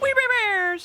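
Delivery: shrill, very high air-horn blare. Saying a favourite show's title, blared like an air horn. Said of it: "I also love saying We Bare Bears where it sounds like an air horn".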